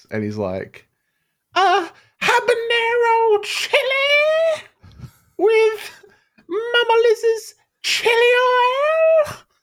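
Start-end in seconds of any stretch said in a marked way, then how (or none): 1.6-9.4 very high, very slow, drawn-out, aggravating voice. Imitating a guy on TikTok who eats chilies: imitating an aggravating voice. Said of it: "he's got this really aggravating voice".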